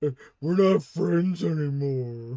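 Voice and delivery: mock blubbering. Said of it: "He's gonna start blubbering".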